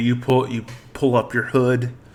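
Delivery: ordinary talk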